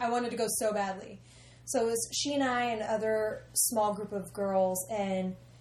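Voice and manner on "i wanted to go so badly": plain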